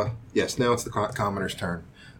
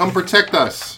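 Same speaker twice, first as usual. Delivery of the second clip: shouting, higher and louder; 9 semitones higher, 5 dB louder than usual. Voicing the Baron yelling to his people: yelling Baron. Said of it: "you hear the Baron yell".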